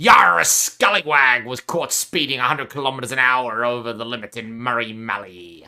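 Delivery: deep, talking like a pirate. Reading a speeding news story after Talk Like a Pirate Day: talking like a pirate. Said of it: "maybe I should do this while talking like a pirate".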